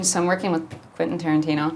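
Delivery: completely casual, relaxed delivery.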